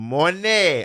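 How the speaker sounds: put-on terrible Jamaican accent. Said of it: "I'm just doing a terrible Jamaican accent".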